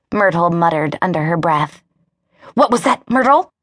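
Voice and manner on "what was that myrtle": sharply hissed. A therapist questions a woman about her muttered remark, hissed. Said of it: "The therapist hissed".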